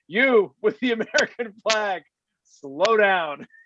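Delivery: put-on harsh voice. Retelling a speaker in a tree ordering the boat: imitating a very harsh voice.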